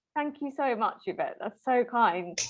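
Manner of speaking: touched, heartfelt, moved, emotional tone. Someone thanks Yvette after her warm words of praise, emotional. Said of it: "it's making me feel very emotional".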